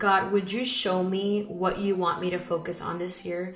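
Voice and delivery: ordinary talk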